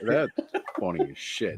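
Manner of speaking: whispered, breathy words through laughter. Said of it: "my eyes are tearing up here".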